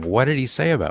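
ordinary delivery

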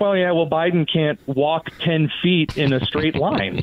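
plain

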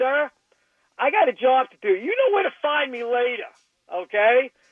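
mock courteous, even-mannered voice. Retelling the speaker's father answering a man who screamed at him, imitating a polite reply. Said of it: "My father politely looked at him and said".

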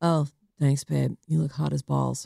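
put-on low, creaky cool-girl voice. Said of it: "'cause she talks real low like that".

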